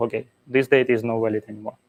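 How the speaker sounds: hurried, rushed, too-fast speech. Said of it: "I hope I'm not speaking too fast".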